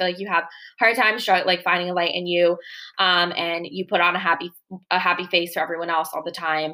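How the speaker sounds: ordinary delivery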